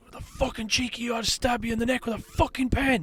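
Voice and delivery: mock furious screeching, very high and shrill. Retelling a woman on a train threatening after a pickpocket attempt: imitating someone screaming. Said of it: "Just screaming at me".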